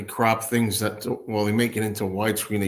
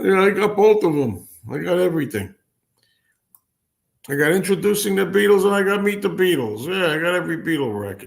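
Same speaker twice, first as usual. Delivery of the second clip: high, loud, bragging voice. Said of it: "that guy when he says".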